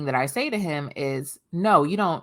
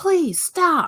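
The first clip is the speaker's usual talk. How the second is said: put-on very high, shrill, strained yelling; 13 semitones higher, 4 dB louder than usual. Describing a meme of a woman in a car, imitating her yelling. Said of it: "like yelling".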